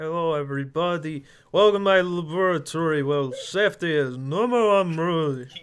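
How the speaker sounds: put-on Russian-accented YouTuber impression voice. Speaker, asked to do his impression, greets everybody: Crazy Russian Hacker impression. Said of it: "do your uh, crazy Russian hacker impression".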